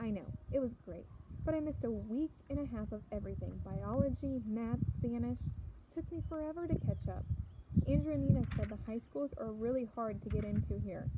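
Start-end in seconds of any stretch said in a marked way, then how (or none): none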